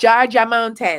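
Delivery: put-on Jamaican accent. Announcing the next retreat's location to listeners, Jamaican accent. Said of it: "Can I say that with a Jamaican accent?".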